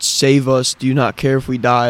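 ordinary talk

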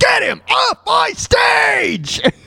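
high, slow screaming voice.

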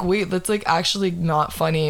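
usual speaking voice

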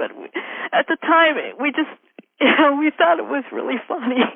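crying and laughing at once, high and swooping. Recalling something from the past that they thought was really funny, crying while laughing. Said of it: "I don't know why I'm crying right now".

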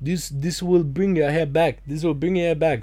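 put-on thick Portuguese accent. Quoting the guy at a shop counter, in a heavy Portuguese accent. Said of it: "this heavy Portuguese accent".

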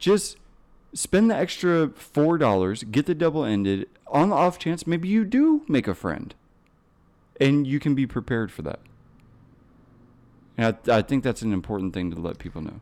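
heavy oozing sarcasm, high and swooping. Recommending the double-ended sounding kit to listeners, heavy sarcasm. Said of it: "the sarcasm oozing out of that".

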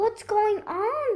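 anxious, uneasy voice. A character suddenly grabbed by two big paws, asking nervously. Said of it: "he asked nervously".

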